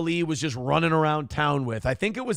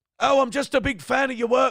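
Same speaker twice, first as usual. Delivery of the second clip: put-on botched Irish accent, pitched higher; 8 semitones higher than usual. Having just said you can't do the accent, try the fan's words again in a bad irish accent. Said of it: "I can't do it".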